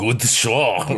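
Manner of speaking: put-on German accent. Joking about Uber Man appearing on the show, Uber Man German accent. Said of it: "That's your German accent".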